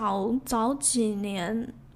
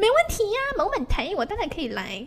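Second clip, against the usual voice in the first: high, sing-song, mock-confident breezy voice. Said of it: "我真的每次学别人讲话都是这个语调".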